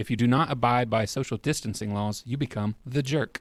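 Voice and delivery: ordinary talk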